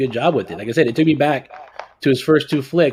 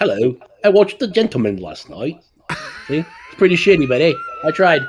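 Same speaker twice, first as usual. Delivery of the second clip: terrible, swooping put-on English accent; 4 semitones higher than usual. Put on the spot by the hosts, the guest tries it live, bad british accent. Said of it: "you have to do it for us right now".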